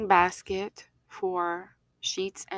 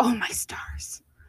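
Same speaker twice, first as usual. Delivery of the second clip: put-on whispered, breathy, sweet little grandma voice; 3 semitones higher than usual. Imitating her grandma's reaction to unsorted laundry, in a cute little grandma voice. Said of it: "In her cute little grandma voice".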